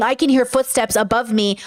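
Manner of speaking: mock obnoxious, annoying put-on voice. Complaining about Nick in the apartment below, mocking obnoxious Nick. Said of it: "obnoxious Nick, saying".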